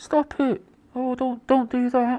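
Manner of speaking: half-hearted, muffled. Imitating someone protesting while covering their mouth: imitating someone speaking quietly behind a hand. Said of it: "whilst covering their mouth and that so no one can hear him".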